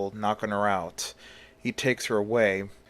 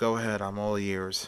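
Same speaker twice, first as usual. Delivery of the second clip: usual speaking voice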